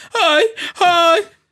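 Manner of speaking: very high, loud, piercing screams. Telling about a guy who screamed whenever the preacher spoke, imitating a man screaming. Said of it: "he was just screaming like that".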